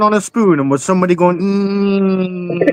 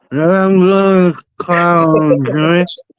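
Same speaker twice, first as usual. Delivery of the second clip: line stretched out very slowly, drawn out. Quoting a guest's threat to clown Joey, imitating Burnman. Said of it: "I've gotta say it like Burnman".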